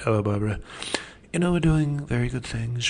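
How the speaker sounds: smooth, calm, soft-spoken voice. Imitating how he sounded in 1980s interviews: smooth, calm Donald Trump impression. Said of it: "It's a smoother voice. It's more calm".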